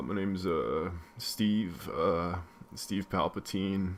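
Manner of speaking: slow, halting, drawn-out, stalling on each "uh". Trying an impression of Philip Seymour Hoffman as Palpatine: Philip Seymour Hoffman impression. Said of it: "my Philip Seymour Hoffman".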